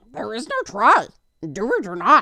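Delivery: put-on loud booming voice, swooping up and down. Talking about Star Wars, the speaker does a Yoda impression. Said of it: "There's my Yoda impression".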